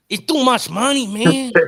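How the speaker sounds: put-on voice, very high and loud.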